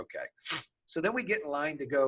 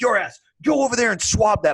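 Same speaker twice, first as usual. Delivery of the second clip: mock yelling, higher and louder; 7 semitones higher, 8 dB louder than usual. Recounting a man yelling orders in the speaker's face: retelling someone yelling. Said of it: "he's yelling at me".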